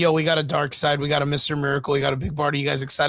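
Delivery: plain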